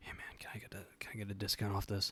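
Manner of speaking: quiet, breathy, secretive whisper. Retelling the dude's phone call to his boss: imitating someone whispering. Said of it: "He's just whispering".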